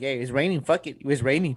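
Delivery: ordinary talk, nothing marked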